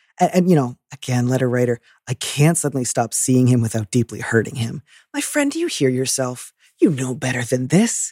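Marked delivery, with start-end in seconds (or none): 5.2-8.2 bracing, lovingly chiding tone, swooping pitch. Answering a letter writer directly: bracing, lovingly chiding tone. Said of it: "I'm trying to say this in a bracing tone".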